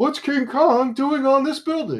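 very high-pitched, loud, belted voice. Imagining King Kong on the building in Seinfeld: Jerry Seinfeld impression. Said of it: "He's like".

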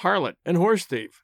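ordinary talk, nothing marked

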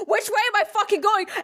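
very high, frantic, panicked freak-out. Telling how an animatronic witch came at them, reenacting own panic. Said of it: "as I'm panicking, freaking out".

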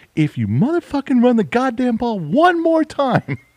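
mock raging yell, shrill, very high, swooping and rising. Retelling a woman's reaction to a football game on tv, retelling angry shouting at tv. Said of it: "she was at the TV going".

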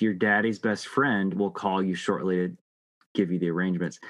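usual speaking voice

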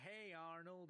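put-on drawled country accent. Describing a kid character from Hey Arnold, quoting his greeting in Stinky's drawl accent. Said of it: "he talks with, like, an accent".

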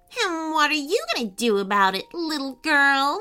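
contemptuous, mocking, taunting sneer in a witch-like voice. The witch answers a girl who has just scolded her, sneering. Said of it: "Sneered the witch".

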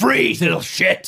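very high-pitched, forcefully hurled delivery. A player's character yells at a goblin: shouting insults. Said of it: "Just shouting horrible stuff to this goblin".

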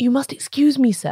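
hoarse, respectful stage whisper. A man breaks bad news to a gentleman about his brother, in a hoarse half-whisper. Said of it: "he said in a hoarse whisper".

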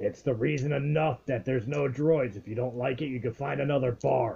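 put-on, very gruff, rough alien voice. Voicing an alien in the bar who answers the droid's owners, very gruff alien voice. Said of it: "you hear a very gruff alien voice say".

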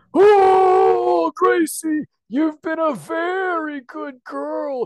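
booming voice with long drawn-out oh. Speaking to a child, performing the Santa Claus voice children expect. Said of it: "I'm going to do the Santa voice that all children expect all the time".

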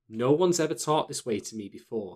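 plain

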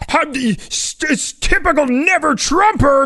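mock very high, slow, drawn-out hollering. Retelling replies from Trump supporters to a tweet: imitating people yelling. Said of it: "just yelling at me".

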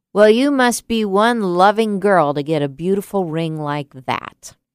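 snide, unkind delivery. Retelling what a man next to her on an airplane said: imitating an unkind remark. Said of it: "he didn't say it very kindly".

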